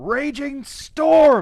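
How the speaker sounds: full-lung battle cry, very loud and very high. A player calling out a move before the dice roll, screaming at top of lungs. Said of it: "I scream at the top of my lungs".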